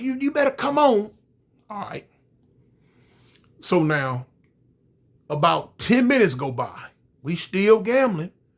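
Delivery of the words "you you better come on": put-on high, squeaky, squeezed voice, pitched higher. Retelling a prison story, imitating someone calling Rex: high squeaky voice. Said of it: "high squeeze voice".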